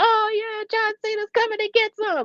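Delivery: put-on commentator screaming, shrieked very high. Retelling the commentary as a wrestler arrives: imitating Michael Cole screaming. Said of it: "Michael Cole was screaming too".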